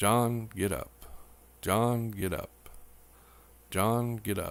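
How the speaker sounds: flat, level, even, rhythmic repeated monotone. Retelling how Daryl wakes John before sunrise, imitating Daryl's monotone. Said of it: "in a monotone rhythm".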